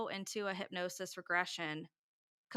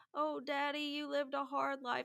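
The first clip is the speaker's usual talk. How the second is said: put-on Texas accent coming through, pitched up; 6 semitones higher than usual. Retelling a regression, the speaker quotes Whitley addressing his father, in Whitley's Texas accent. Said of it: "you kind of hear his Texas accent come out".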